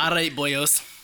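very bad, deliberately awful fake Scottish accent. Told to commit to the bit, the speaker launches into a very bad Scottish accent. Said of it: "ask a question in a very bad Scottish accent".

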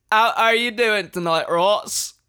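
put-on British accent. During a mic test, greeting the other speaker in an attempted british accent. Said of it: "get like real British".

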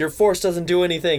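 ordinary delivery

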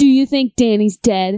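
aggressive. Wrapping up a movie discussion, suddenly asking about Danny, aggressive. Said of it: "I said that so aggressively".

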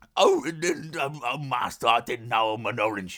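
slow, halting, drawn-out voice stumbling over words. Doing an impression of a talking orange. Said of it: "That's my impression of Andy Serkis being an orange".

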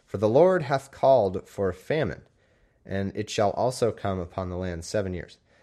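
ordinary talk

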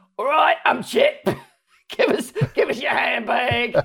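put-on gruff cartoon voice. Describing how Chip sounds in France, doing a gruff, aggressive Chip voice. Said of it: "It's the same for Chip and Dale".

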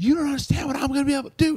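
put-on very high, shrill, screeching scream. Retelling how a worker screamed at a Catwoman cosplayer: imitating a woman screaming. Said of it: "she's screaming at her".

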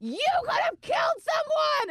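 livid police officer yelling.

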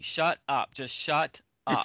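ordinary talk, nothing marked

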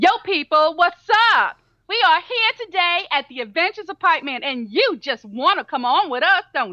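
sassy female voice full of attitude. Told to put more female attitude into it, the speaker tries again: put-on female attitude voice. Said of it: "Female attitude".

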